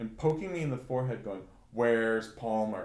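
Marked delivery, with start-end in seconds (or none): 1.7-2.9 furious, really angry tone. Recalling being woken by a poke in the forehead: imitating an angry demand. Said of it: "Like really angry".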